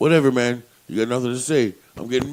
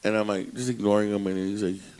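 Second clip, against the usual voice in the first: usual speaking voice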